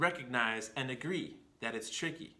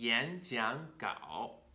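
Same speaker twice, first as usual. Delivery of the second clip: 演讲稿 with rising, rising, dipping tones. Mandarin tone change lesson: 2-2-3 tones on 演讲稿. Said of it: "Second tone, second tone, third tone".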